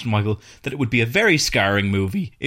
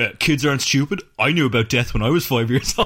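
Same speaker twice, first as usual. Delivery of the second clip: mocking, imitated put-on voice. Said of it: "an army of people being like".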